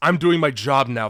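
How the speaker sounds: ordinary talk, nothing marked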